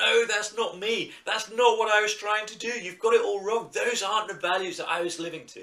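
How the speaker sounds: loud, high-pitched shouting. Acting out a ghost at its own funeral, protesting the eulogy: shouting out. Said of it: "And you're shouting out".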